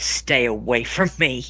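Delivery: low, venomous, hate-filled tone. Recounting what she said to him after whispering his name: mock hateful tone. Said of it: "with hatred in her voice".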